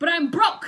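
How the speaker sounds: comic shout, loud and high.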